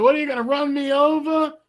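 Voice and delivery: mock very high, shrieking yell. Retelling a car confrontation, the man outside is screaming: imitating a man screaming. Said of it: "He's screaming".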